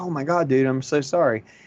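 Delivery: ordinary delivery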